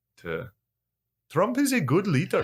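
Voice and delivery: put-on Indian accent, very high-pitched and swooping. A speaker practises an accent for the other speaker, indian accent impression. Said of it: "There you go".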